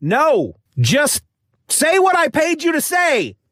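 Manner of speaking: impatient, irritated snap, very high-pitched and rising. Pushing the reader to read the script: acted irritation. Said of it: "Settle down now, sonny boy".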